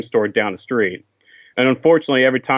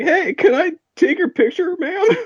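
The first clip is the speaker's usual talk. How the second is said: very high, squeaky adolescent voice. In middle school, asking his first celebrity for a picture: imitating own squeaky voice. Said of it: "in a very squeaky voice".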